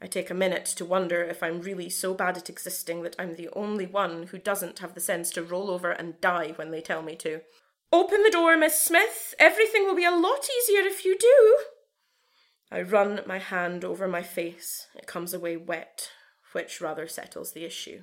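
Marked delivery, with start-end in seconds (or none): 7.9-11.6 very high, loud, shrill, overly friendly nurse voice. Reading a story, the narrator voices a nurse outside a door: overly friendly, high-pitched. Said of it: "and the voice of an overly friendly woman blows through the keyhole. / It doesn't block her out. / The shake in the nurse's voice makes the lava fume in the pit of my stomach. / The little high-pitche".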